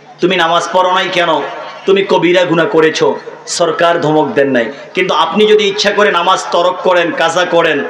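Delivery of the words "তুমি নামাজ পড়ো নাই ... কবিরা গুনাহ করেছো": normal talking voice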